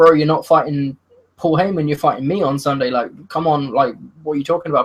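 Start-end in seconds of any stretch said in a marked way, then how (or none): none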